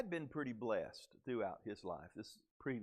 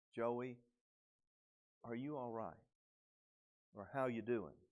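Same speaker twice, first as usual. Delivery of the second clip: hushed, quiet, caring, concerned voice. Acting out a Life Group member asking Joey if he's all right, imitating a quiet, concerned voice. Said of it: "in that quiet, concerned voice".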